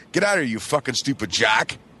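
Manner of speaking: ordinary talk, nothing marked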